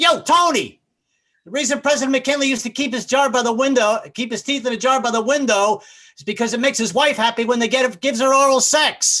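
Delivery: hollered yell. Retelling yelling back at Tony through the window: retelling own yell. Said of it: "I yelled back, I was like".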